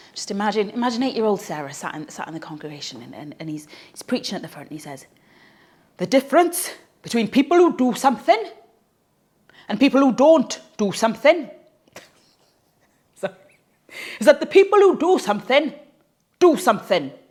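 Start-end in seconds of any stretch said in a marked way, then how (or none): 5.9-17.0 put-on heavy Welsh preacher accent, loud and high. Retelling what a preacher said to the congregation: thick Welsh accent. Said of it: "he had a very thick Welsh accent, so let me give it to you in the thick Welsh accent".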